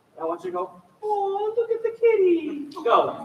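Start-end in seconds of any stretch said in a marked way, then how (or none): 1.1-2.7 light, very high, slow head voice. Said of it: "the higher stuff is a little more in your head".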